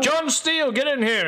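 high guard voice, calling out. Voicing a guard who yells for john steele to come in: guard yelling. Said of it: "one of the guards yell out".

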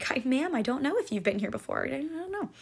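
mock very quiet, hushed, polite customer-service voice. Retelling answering a customer's question, in best customer service voice. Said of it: "Best customer service voice".

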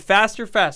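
plain

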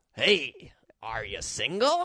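very slow, drawn-out character voice with big pitch swoops. Showing the voice they would do in a bit: Grinch voice. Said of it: "That's kind of the Grinch voice I would do".

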